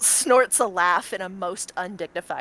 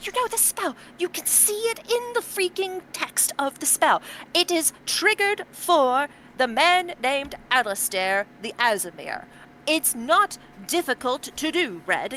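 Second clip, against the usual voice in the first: sudden aggressive tone, voice raised high; 8 semitones higher than usual. Voicing a woman character who points at a spell, suddenly aggressive toward you. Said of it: "uncharacteristically like suddenly aggressive towards you".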